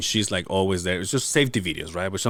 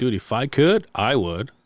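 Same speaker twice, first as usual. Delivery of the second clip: plain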